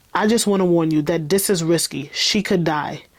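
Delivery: plain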